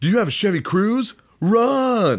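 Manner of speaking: play-acted very high, loud shout, drawn out. Retelling how a man at the movies yelled at the screen: imitating a man shouting at a screen. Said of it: "This guy just shouts, like, shouts at the screen".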